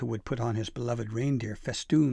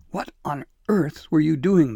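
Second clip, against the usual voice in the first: very loud, high, insistent, demanding; 5 semitones higher, 8 dB louder than usual. A narrator voices Dabble Dee, holding the cowering elf by the collar, demanding. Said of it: "she demanded".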